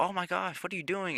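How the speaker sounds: put-on high, quiet shocked squeal in a girl's voice.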